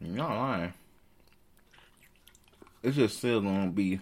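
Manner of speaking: talking while chewing. Discussing an upcoming wrestling match with co-hosts, talking while chewing. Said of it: "Sorry, I'm eating a fruit chew".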